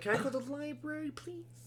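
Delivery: put-on very high, soft, hushed five-year-old voice. Recalling how they once tried to say a word, childlike five-year-old voice. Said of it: "I was like".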